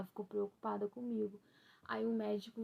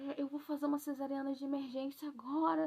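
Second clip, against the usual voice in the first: put-on tearful voice, crying through the words; 4 semitones higher than usual. Retelling a phone call to her husband, imitating own past crying. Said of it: "Eu liguei chorando pra ele".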